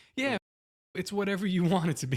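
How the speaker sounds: put-on sassy, high, loud girl's voice. Retelling what the sassy girl Grok answered: sassy Grok voice. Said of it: "talking to the sassy girl Grok".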